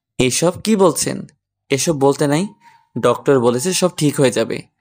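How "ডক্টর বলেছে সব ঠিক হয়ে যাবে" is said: plain reading voice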